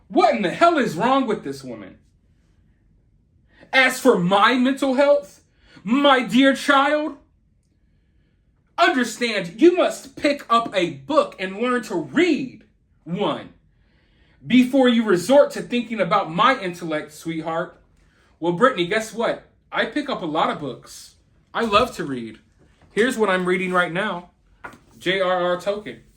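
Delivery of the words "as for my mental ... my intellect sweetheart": sassy, snapping attitude. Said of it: "had the snap and the neck roll all over it".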